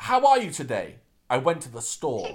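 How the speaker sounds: stiff, mechanical robot voice. Mocking how everyone in the film speaks: imitating robotic speech. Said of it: "in a robotic".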